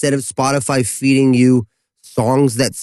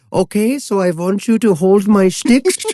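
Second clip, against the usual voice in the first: put-on Dutch accent, raised pitch; 7 semitones higher than usual. Recalling a jazz fusion drummer from the Netherlands, imitating Jan's Dutch accent. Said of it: "just go into the Netherlands voice".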